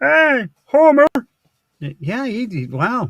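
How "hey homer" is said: put-on cartoon drunk voice, higher and louder. Doing an impression after announcing it: Barney Gumble voice. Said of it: "Here's Barney".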